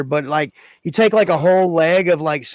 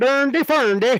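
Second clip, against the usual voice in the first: high-pitched nonsense babble sounding vaguely Swedish; 8 semitones higher than usual. Showing how the Icelandic voice was meant: Swedish Chef voice. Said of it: "like the Swedish chef".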